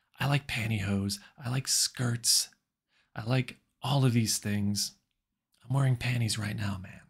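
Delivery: put-on hushed, quiet voice. Retelling what Joe Rogan said in private: imitating a hushed Joe Rogan. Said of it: "in, like, a really hushed tone".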